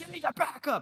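acted-out very high, unhinged screaming rant. Retelling how a 75-year-old man got out of his car; retelling his scream. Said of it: "start screaming at me".

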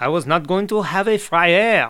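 terrible, high-pitched, put-on French accent. Retelling what the French chef at friends' bistro said: terrible French accent. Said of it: "That's a terrible French accent".

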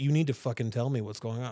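ordinary delivery

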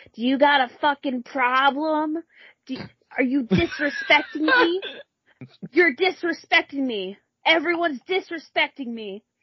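put-on hostile, aggressive, confrontational, in-your-face delivery. Retelling a woman walking around yelling at people, imitating a woman yelling. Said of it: "walking around and yelling".

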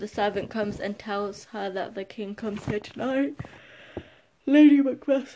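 speaking mid-yawn. Explaining a scene from Macbeth, breaking off to apologize; yawning. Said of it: "sorry, I'm yawning".

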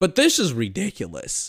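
voice cracking and breaking. A speaker ranting about LeBron James and Giannis, voice cracking. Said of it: "Sorry for the voice crack".

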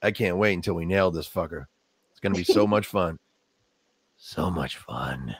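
very low, deep, quiet tough-cop mutter. Imagining how a character would sound saying this, try your best Dirty Harry impersonation. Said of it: "trying to do my best Dirty Harry impersonation".

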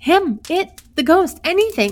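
wild, loud, high, unrestrained babbling cry. Hurst answers the others, who ask what he has seen, wild. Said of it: "said Hurst wildly".

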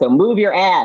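slow, loud, high-pitched tough coach bark.

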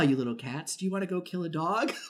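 very sultry, soft, voluptuous radio voice. Acting out a character's line from a scene, in a very sultry, voluptuous voice. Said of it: "very sultry and voluptuous voice".

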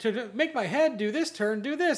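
high animatronic puppet voice. Retelling an instructional video hosted by an animatronic: imitating the Billy Bob animatronic. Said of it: "But then he's like".

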